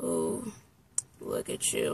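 mock worn-out, weary, slow, breathy half-whisper. Retelling a compliment he gave while really tired: imitating him sounding really tired. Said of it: "but he was, like, really tired".

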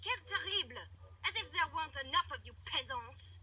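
phony, put-on French accent. Speaking to an unwelcome newcomer, in a fake French accent. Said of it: "enough of that fake accent".

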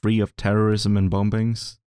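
normal talking voice

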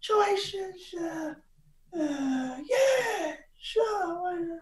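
very high, slow mob-movie gangster voice. Doing an impression after being asked for one: Pantangeli impression. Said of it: "that was Pantangeli from The Godfather".

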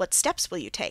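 ordinary delivery

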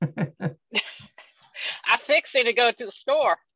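Southern US accent, very high pitch. Asked by the host to say the sentence again, in a Southern accent. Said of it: "Can we hear it with that Southern accent?".

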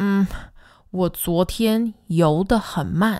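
ordinary talk

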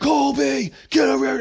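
very high, drawn-out scream. A dad recalls how he used to call his oldest son, imitating his own screaming. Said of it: "because I used to just scream".

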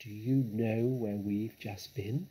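dark, ominous whisper. Mr. Fox leans his face close to Badger's and asks: whispering darkly. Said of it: "whispered darkly".

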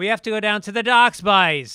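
Irish brogue slipping out unhidden. Mocking an Irish actor whose brogue comes out in a Baltimore role, imitating an actor's Irish brogue. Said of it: "you hear this fucking brogue comes out".

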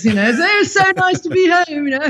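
sudden, very high, put-on British accent. Speaker describing how their speech shifts on landing at Heathrow: British accent. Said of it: "all of a sudden I'm speaking like this".

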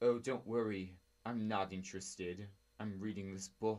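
put-on British English accent. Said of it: "because he has a British accent".

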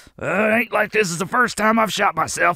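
hurting, pained grunts. Character answering talk of a rescue mission, grunting in pain. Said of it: "(grunting in pain)".

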